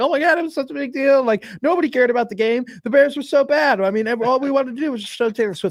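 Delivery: play-acted, very high, all-excited gushing chatter. Retelling how sports hosts reacted the next day: imitating Charissa Thompson excitedly. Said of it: "getting all excited and like".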